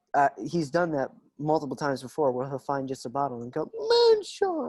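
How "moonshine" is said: very high, absurd, ridiculous-sounding voice. Showing how a friend says it on finding a bottle: Thomas impression. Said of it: "sorry, I can't do it".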